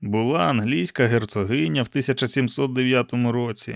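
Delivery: plain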